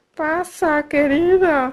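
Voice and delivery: put-on high little grandmother voice. Reading a fairy tale aloud, the wolf in bed: wolf imitating the grandmother's voice. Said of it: "dijo el lobo haciendo la voz de la abuelita".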